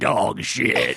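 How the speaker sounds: rough, hardened, gravelly, creaky biker rasp. A dad retells what his kid said around the house, low, gravelly Hell's Angels voice. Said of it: "he says it in that low, like gravelly, like Hell's Angels voice".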